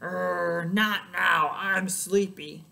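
very slow, low, loud growl, not drawn out. Reading a bedtime story aloud as Lion speaks, Lion's growling voice. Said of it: "before Lion growled".

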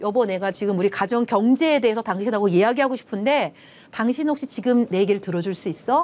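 ordinary talk

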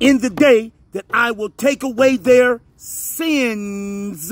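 stress on the word "sins", read slowly.

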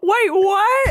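mock panicked cry, high and loud.

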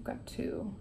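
whispered, very soft.

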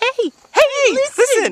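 annoying, nagging, very high sing-song cry. Suggesting a costume role, quoting annoying Navi: annoying Navi voice. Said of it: "annoying, like, n-, uh, Navi".

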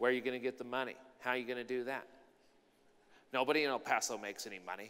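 very quiet, hushed, doubting voice. Acting out a fourth cousin questioning a business dream: mimicking a doubting contrary voice. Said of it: "The contrary voice".

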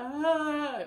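high-pitched, loud, snotty sob. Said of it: "it doesn't have to be a snotty cry".

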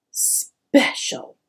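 said with a snort. Twig, alone because he is different, says one word with a snort. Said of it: "and snorted".

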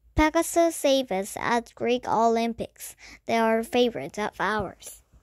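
plain

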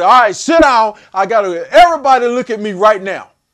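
confident, loud, authoritative voice. Showing what to say on walking into a locker room; authoritative commanding tone. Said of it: "having that tone of voice".

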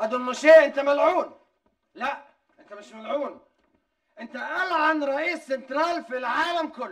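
speaking loudly. Confronting another man in front of everyone, loud raised voice. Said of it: "وطي صوتك من فضلك".

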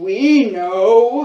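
loud, rumbling creature voice. Narrator reads a voice from the swamp answering the stuck monkeys, rumbling voice. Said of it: "rumbles a voice from the swamp".

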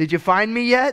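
put-on play-acted high, loud children's shouting. Retelling children at hide and seek calling out: imitating kids yelling. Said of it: "they're already yelling".

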